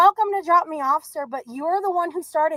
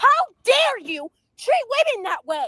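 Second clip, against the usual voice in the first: angry shouting, higher pitch; 7 semitones higher than usual. Confronting a driver who ordered her out of his car: yelling.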